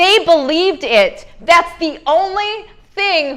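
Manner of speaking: choked-up, slightly high voice, catching, holding back tears. Speaker talking to a group, holding back tears. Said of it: "I'm not going to cry right now".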